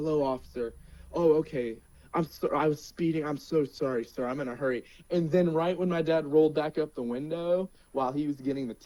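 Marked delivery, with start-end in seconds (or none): 0.0-4.8 put-on polite, friendly, mock-respectful tone. Retelling the dad talking to a police officer after speeding, imitating polite, friendly tone. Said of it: "My dad was like so respectful and friendly".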